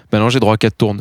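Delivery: plain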